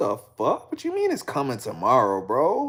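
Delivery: mad, disbelieving angry rant, swooping pitch. Retelling a same-day order that was coming tomorrow: retelling own angry rant. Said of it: "I was so mad".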